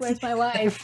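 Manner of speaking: high, comedic put-on character voice. Imagining a film character given a different voice, asking for his wife: Borat voice. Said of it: "gave him a Borat voice".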